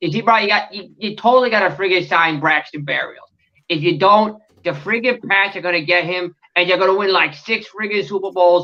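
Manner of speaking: fast, put-on Boston accent. Asked for a take on re-signing braxton berrios, answering in a boston accent. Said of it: "Give us your take on re-signing Braxton Berrios in a Boston accent".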